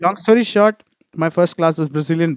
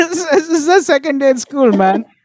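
much higher, louder dismayed outburst. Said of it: "And I was like".

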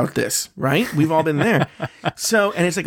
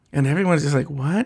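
normal talking voice

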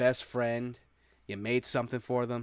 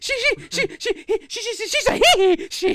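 put-on shrill, very high, very loud stammering little-kid voice; 10 dB louder than usual. Speaker stammers out what someone said, stammering like the Mrs. Doubtfire kid. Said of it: "I sound like the little kid, like the kid from Mrs. Doubtfire".

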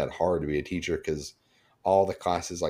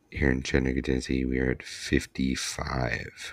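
pilot announcement voice, lower; 5 semitones lower than usual. Giving the weekly air quality reading on a podcast, sounding like an airline pilot. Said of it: "you kind of sounded like the uh, the pilot".

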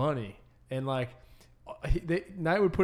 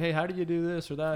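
ordinary delivery

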